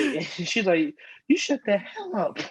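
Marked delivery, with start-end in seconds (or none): 1.3-2.4 high-pitched, rude snapback.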